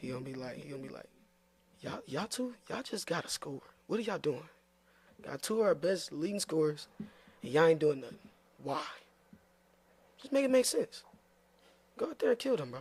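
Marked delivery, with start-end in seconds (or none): 1.8-12.8 worked-up, fired-up coach voice. Asked for an impression of the coach, the speaker performs it: Coach Chapman impression. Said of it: "Give us your best impression of Coach Chapman".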